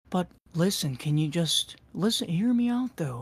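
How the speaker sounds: very quiet, soft, coaxing, manipulative tone. Retelling how a friend talked to manipulate: imitating someone talking very quietly. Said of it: "He would talk very quiet".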